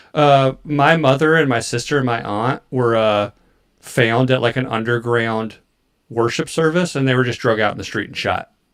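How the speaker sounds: ordinary talk, nothing marked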